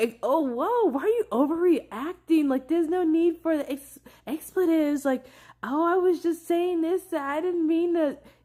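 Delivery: mock sly, high, butter-wouldn't-melt faux innocence. Acting out a sly person brushing off an angry reply: imitating a sly person playing innocent. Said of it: "says some sly shit".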